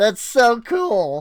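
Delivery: voice breaking partway through the phrase. Showing off a mine colony build, voice cracking. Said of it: "Voice crack".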